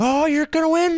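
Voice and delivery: very high-pitched, super animated, excited shout. Retelling a spotter's radio call while leading late in the race: imitating an excited spotter. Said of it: "he is getting super animated".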